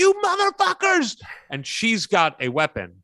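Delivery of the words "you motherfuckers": put-on, very high-pitched screamed-out curse. Retelling a wife confronting two people in her kitchen, imitating someone screaming. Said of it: "who is still screaming".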